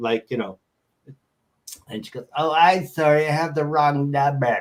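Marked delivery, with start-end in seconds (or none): 2.4-4.6 put-on odd, weird elderly woman voice. Retelling a strange office phone call, quoting the woman caller: weird old lady voice. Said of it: "like a weird old lady voice".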